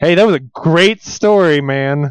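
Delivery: very slow, faintly sarcastic reading. Imitating how another speaker read out a listener's comment: imitating a sarcastic reading. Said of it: "you read that first line as".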